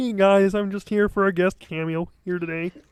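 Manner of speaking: put-on puppet frog voice. Doing a guest cameo as Kermit the Frog: Kermit the Frog voice. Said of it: "you do that really well".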